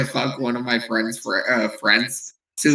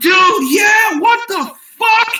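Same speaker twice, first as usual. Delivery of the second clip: many voices screaming, high and drawn out; 5 dB louder than usual. Retelling a group's reaction after seeing something shocking: imitating group screaming. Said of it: "We were all just screaming".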